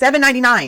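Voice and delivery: loud emphatic yell. Talking to viewers about a product, yelling. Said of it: "sorry for yelling".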